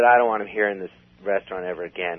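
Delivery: ordinary delivery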